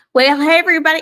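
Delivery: very loud, high-pitched, strong Texan accent. Greeting everybody at the start of an episode: very Texan delivery. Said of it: "that was a very Texan way".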